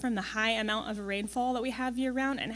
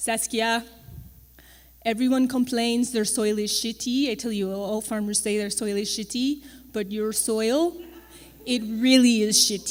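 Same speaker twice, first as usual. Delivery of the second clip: put-on speech in a French-Canadian accent; 6 dB louder than usual. Quoting what a French-Canadian man told you in the field, use his French-Canadian accent. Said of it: "He's also French-Canadian. He has this great accent".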